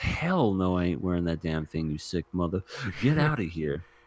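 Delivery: ordinary delivery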